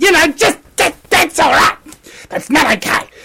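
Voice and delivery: agitated, worked up. A speaker addressing his audience as folks gets worked up: agitated, needing to calm down. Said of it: "Just let me calm down for a second here".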